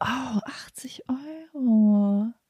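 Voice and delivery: slow, shocked, aghast whisper.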